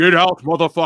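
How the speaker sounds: booming yell at full volume. Joking about a celebrity-voiced security alarm that scares people off, imitating James Earl Jones yelling. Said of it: "hear James Earl Jones yell at you".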